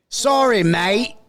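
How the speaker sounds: very high, loud, terrible fake Australian accent. Podcast host apologizing to Corey, who has COVID, in a terrible fake Australian accent. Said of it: "that was a terrible Australian accent".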